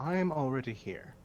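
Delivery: soft, hushed, quiet voice. Game master voicing Waterdeep's invisible representative announcing she's present: quiet voice. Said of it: "a quiet voice pop in and go".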